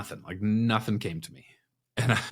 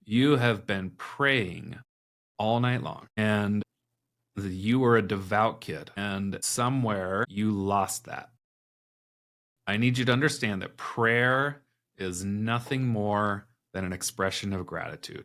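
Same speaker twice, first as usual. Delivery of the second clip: ordinary talk, nothing marked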